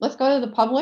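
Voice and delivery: slightly high, words mushed while chewing food. Speaker moves the meeting on to the public, talking while chewing. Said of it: "sorry i'm chewing".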